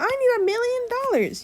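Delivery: very high, weird cartoon voice, pitched way up. Imitating a brother doing a weird voice in the background: Elmo voice. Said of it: "making a weird Elmo voice".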